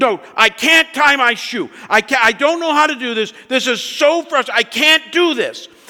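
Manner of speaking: very loud, high-pitched, upset yelling. Telling a story about Hannah, who wouldn't let the speaker talk, imitating Hannah yelling, upset. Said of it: "she's yelling, and she's all upset".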